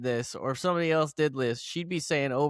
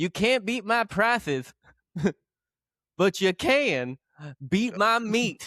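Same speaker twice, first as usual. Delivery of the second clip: high, slow, with mock laughing partway through; 6 semitones higher than usual. Retelling a butcher shop's ad slogan: imitating someone laughing mid-line. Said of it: "he laughs in the middle of it".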